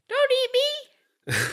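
very high, squawky talking-bird voice. Podcast hosts joking about cannibalism; one is imitating Will the parrot. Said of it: "That's a good impression".

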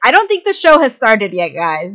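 loud, high-pitched yell. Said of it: "she just yelled out".

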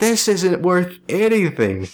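high, dismayed, let-down scream. Imagining the other speaker's disappointed reaction: imitating someone screaming. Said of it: "you're kinda screaming out".

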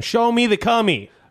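very high, wild, overexcited nonstop yelling. Retelling a sketch where Cuba Gooding Jr. jumps on a couch: imitating Cuba Gooding Jr. yelling. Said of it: "starts yelling".

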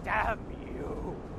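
mock yell, low, slow and dramatically drawn out.

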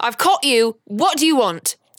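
angry, accusing cry. Playing Uma, screaming at an invisible little man: screaming at a little man. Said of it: "you all hear Uma screaming at a little man".

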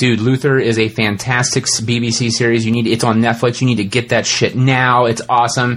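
ordinary talk

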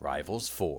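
whispered, barely-there, very quiet, breathy. Recounting a tearful argument, quoting how someone quietly said it. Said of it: "Cara Maria just quietly said".

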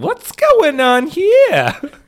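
very high, shrill, loud, swooping, stretched-out voice. Acting out Harley Quinn walking in on a scene: Harley Quinn voice. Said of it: "Is that her voice?".

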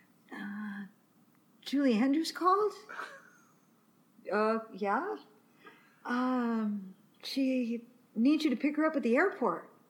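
put-on groggy, half-asleep voice with drawn-out um. Retelling a phone call from a boyfriend who just woke up: imitating Chris sounding half asleep. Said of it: "he sounds so, like, he's still asleep".

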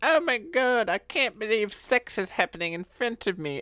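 high-pitched, scandalized tone. Acting out a grandma walking past a couple in the woods: imitating Grandma Prudence. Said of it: "Grandma Prudence is walking by, and she's like".

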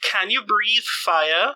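high, carrying shout at a full yell. Rita shouts to the salamanderkin waiting outside the crater, shouting. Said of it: "And Rita shouts it".

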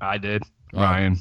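hesitant, reluctant. Asked who made it through the firewall, introducing self, reluctant. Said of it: "He sounds reluctant".

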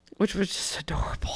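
quiet whispered aside.

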